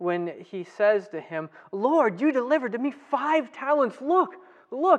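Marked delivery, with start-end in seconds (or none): 1.7-5.0 put-on, glad, joyful, lifted voice. Retelling the parable, voicing the servant speaking to his lord, acting out joyful speech. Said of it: "you can hear the joy in his voice".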